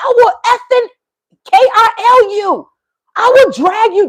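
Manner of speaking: shrill, very high, threatening holler. Retelling what one of the Americans yelled out the window at night, imitating someone yelling. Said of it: "This is what you're yelling at".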